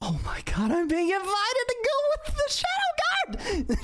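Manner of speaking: swooping, very high, rising excited shriek. Invited by the others to join a kaiju fight, the character answers with an excited scream. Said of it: "She screams".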